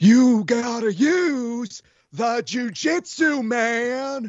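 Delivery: very high, very slow, dragged-out, stretched drawl. Reading lines from a movie aloud: Nicolas Cage voice. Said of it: "in your best Nicolas Cage voice".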